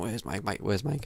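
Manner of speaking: imitated boozy, drunken shouting, calling out loudly. Telling a story about his own drunken night, acting out himself shouting for someone. Imitating drunken shouting. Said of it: "He's shouting at me".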